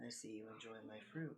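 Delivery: very quiet, soothing, calming murmur. Game master voicing the voice a player hears while eating the fruit, very calming voice. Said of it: "you hear this very calming voice".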